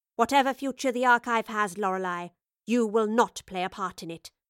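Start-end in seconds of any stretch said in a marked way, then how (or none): none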